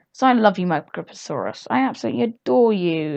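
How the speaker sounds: sarcastic, insincere, mocking adoration. Talking about being short on bucks in a game: sarcastic. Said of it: "I really hope you can tell I'm being sarcastic".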